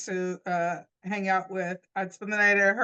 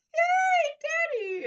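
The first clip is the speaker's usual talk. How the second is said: play-acted, thrilled, excited voice, pitched very high. Retelling greeting a father in the lobby: imitating own excited past self. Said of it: "I'm all excited".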